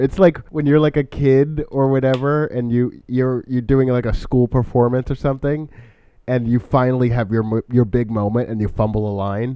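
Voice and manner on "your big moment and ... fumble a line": ordinary talk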